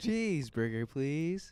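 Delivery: put-on caricatured American accent. The group takes turns impersonating Americans; one speaker does a mock American accent. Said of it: "do like a make fun of American".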